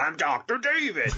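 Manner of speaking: fake crazy-sounding voice. Asked by the host which persona he is now, answering in a crazy voice. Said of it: "That's a crazy voice".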